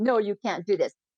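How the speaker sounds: plain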